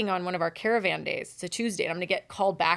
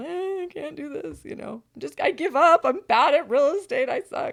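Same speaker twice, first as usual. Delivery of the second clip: mock sobbing, higher pitch; 8 semitones higher, 4 dB louder than usual. Retelling a call to a coach about giving up: retelling own crying. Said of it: "and I was crying".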